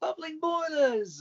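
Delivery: very high, loud put-on cartoon voice. Retelling an actor doing a voice for fans outside a premiere: Thomas voice. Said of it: "he actually did his Thomas voice".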